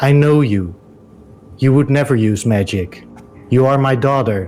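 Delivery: toneless, even, entranced flat monotone. Narrating a story, reading the Countess's repeated words in a monotone voice. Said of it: "In a monotone voice".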